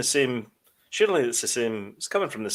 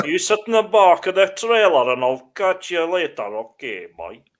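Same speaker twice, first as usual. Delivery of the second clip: loud, high, terrible put-on Scottish accent; 5 semitones higher, 7 dB louder than usual. A performer voices a character addressing a boy, terrible Scottish accent. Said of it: "that's a terrible Scottish accent".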